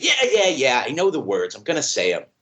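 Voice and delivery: acted impatient, irritated know-it-all snap with swooping tone. Retelling how he answers the wise man's warning, mimicking a snappish reply. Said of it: "he just snaps on it".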